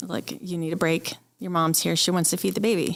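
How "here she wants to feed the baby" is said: ordinary talk, nothing marked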